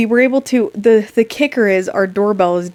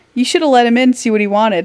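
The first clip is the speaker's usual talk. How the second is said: quick, sarcastic tone; 3 semitones higher than usual. Speaker reads out a text from their mom, imitating mom's sarcastic text. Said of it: "like sarcastically".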